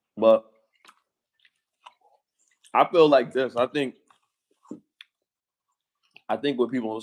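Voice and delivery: talking while chewing, mouth full. Speaker eating pizza mid-conversation, talking while chewing. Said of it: "Sorry if I'm chewing".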